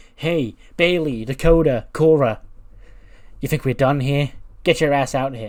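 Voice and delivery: angry calling out.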